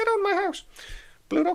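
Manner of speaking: high, quick, squeaky voice. Acting out a cartoon moment mid-story: Mickey Mouse impression. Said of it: "that's my Mickey Mouse impression".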